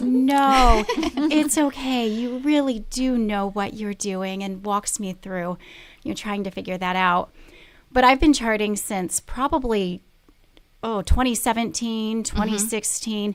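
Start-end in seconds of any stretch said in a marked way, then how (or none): 0.0-4.4 sweet, unhurried, slow, drawn-out delivery. The speaker quotes Wendy reassuring her about her chart: imitating Wendy's soft, sweet voice. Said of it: "in her soft, sweet voice".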